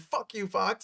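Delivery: mock high-pitched, raging scream. Retelling a movie scene where Deadpool grabs the microphone: imitating Deadpool screaming. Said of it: "he starts screaming".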